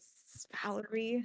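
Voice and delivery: put-on whisper. A player voicing Valerie pulls another character aside: whispering as Valerie. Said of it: "gonna whisper and be like".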